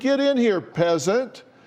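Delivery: put-on child's yell. Retelling what a twelve-year-old child yells: imitating a child yelling. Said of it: "a twelve-year-old child yelling".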